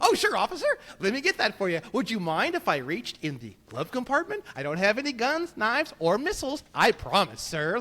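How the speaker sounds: put-on eager, old-time 1950s-style courteous polite voice. Imagining talking to a police officer after being pulled over, in a 1950s-style polite voice. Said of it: "like a nineteen fifties kind of thing".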